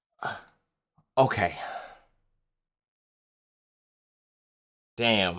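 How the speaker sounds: defeated, dejected, deflated tone. Reacting to a damage total after adding it up, sounding defeated. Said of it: "you sound defeated".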